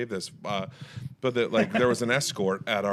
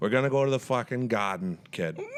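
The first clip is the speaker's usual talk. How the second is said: put-on Boston accent, laid on, sassy. Asked how they would say it with a boston accent, answering in a boston accent. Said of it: "How would you do that with a Boston accent? I'd be like".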